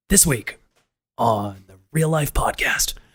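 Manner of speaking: movie trailer narrator voice. Joking after wishing for a deep movie trailer voice: deep movie trailer voice. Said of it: "one of those deep voices".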